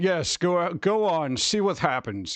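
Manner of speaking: very slow, measured storyteller narrator voice. Show the kind of narrator you need, urging someone on, in an Ian McKellen voice. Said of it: "like Ian McKellen".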